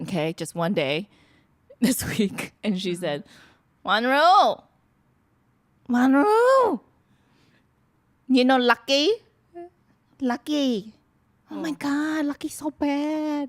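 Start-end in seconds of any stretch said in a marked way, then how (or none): 3.8-13.5 slow, put-on Vietnamese woman's voice, drawn-out "bad". Retelling what a five-foot Vietnamese lady said at work: imitating a Vietnamese lady. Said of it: "do you want to hear it in my voice or do you want to hear it in her voice?".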